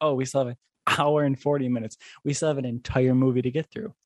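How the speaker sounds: ordinary talk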